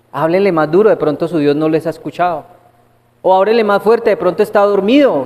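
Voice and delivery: put-on scornful, fast, mocking sarcastic jeering tone. Retelling a story, the speaker acts out a man taunting people calling on their god: retelling a mocking, sarcastic taunt. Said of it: "en tono sarcástico, en tono burlón, les dice".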